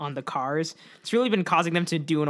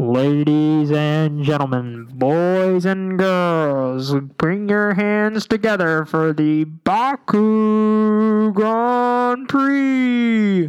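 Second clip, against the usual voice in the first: very loud, booming arena announcer, "Baku" drawn out; 4 semitones higher, 9 dB louder than usual. Starting a Fusion episode, doing a loud announcer voice. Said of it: "I'm going to do my announcer voice".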